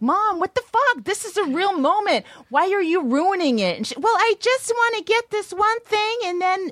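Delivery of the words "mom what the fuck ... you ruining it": put-on, very high, shrill yelling. Retelling how they yelled at their mom when she walked into frame, retelling yelling at mom. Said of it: "we just start yelling at her".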